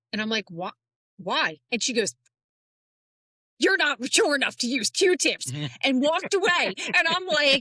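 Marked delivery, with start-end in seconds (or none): 3.5-5.5 mock-angry, stern scolding tone. Retelling what the speaker's angry mom said to them, imitating angry scolding. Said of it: "my mom was so mad at me".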